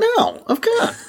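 very high, squeaky voice with laughter through it. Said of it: "my voice got really high".

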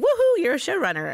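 high, over-excited, ironic, ridiculous cheer. A writer describes landing a showrunner job, in a mock-excited tone. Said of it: "I'm using that tone of voice".

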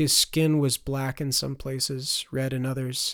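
ordinary delivery

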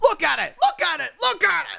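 very high, rough, angry voice. Showing an impression from Phenomenon: John Travolta angry impression. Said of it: "my best, like, John Travolta angry impression".

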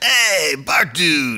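high-pitched cartoon school bus driver voice. Giving hints about a show character, the speaker does the bus driver impression. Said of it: "you're good at his impression".

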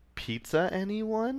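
rising, question-like pitch climbing on anyone. Reading an email subject line aloud: rising question intonation. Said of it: "I love how the intonation goes up".

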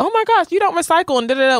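put-on laughing through the words, very high. Recapping a scene where Garcelle is upset, imitating Annie laughing. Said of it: "literally laughing like".

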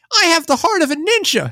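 very high, loud, mock English dub voice.

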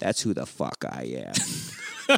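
smug, breathy, whispered near-whisper. Retelling a movie scene, showing a badge: Smecker impression. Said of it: "It kinda sounded exactly like him right there".

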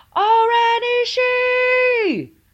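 shrill, very high, loud all-out yell, drawn out. Retelling a movie scene where a woman returns to the dance floor, retelling a yell. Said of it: "she yells".

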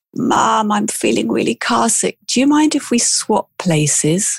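put-on small, piping little child's voice. Retelling how the daughter behind spoke up: imitating daughter's little voice. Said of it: "pipes up this little voice and it says".

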